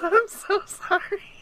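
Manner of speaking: giggly, laughing, very high-pitched voice. Apologizing after being asked why she is laughing, laughing. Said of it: "Why are you laughing?".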